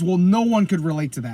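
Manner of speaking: plain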